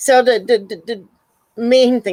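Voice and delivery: stammering, stuck repeating a word. Explaining a plan to another speaker, stuttering. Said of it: "I'm stuttering here".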